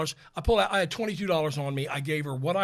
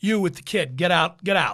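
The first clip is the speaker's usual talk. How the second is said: put-on brash New York cop voice, louder; 6 dB louder than usual. Retelling how a police officer ordered them out of the car; brash New York cop impression. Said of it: "Very typical, brash New York City police officer".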